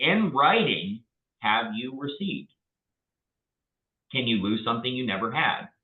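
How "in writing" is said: strong stress on the words in writing. Asking how many full price offers were received: emphasis on in writing. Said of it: "and I say it with emphasis".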